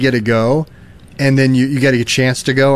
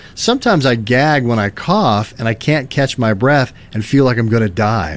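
ordinary talk

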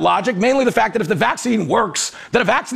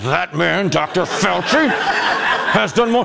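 put-on voice spoken through clenched teeth; 3 semitones lower than usual. Show how he always talks like he's holding something in: Lawrence O'Donnell through clenched teeth. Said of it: "He has these clenched teeth like".

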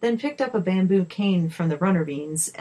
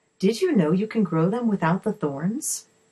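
plain reading voice

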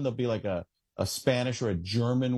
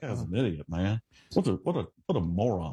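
put-on Southern mutter, much lower and slower; 5 semitones lower than usual. Describing how he talks, imitating him muttering under his breath. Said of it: "He's just always under his breath".

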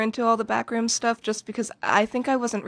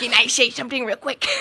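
put-on poor acted cartoon child voice. Repeating the other speaker's line as a bad Cartman impression. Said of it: "That was really bad".

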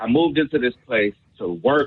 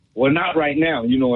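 reenacted angry raised voice, higher pitch; 3 semitones higher than usual. Retelling a tense exchange with the man who fired them, reenacting a raised, angry tone. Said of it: "in a raised tone because I was pissed off".

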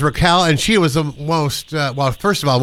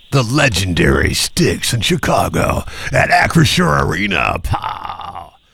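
very slow, drawn-out arena concert announcer delivery. Announcing concert tickets a caller has won: concert announcer voice. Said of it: "That's concert voice".

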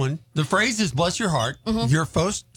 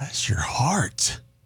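fatherly, lower voice; 5 semitones lower than usual. In an acting game, a player delivers the line in dad mode. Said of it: "you're in dad mode".

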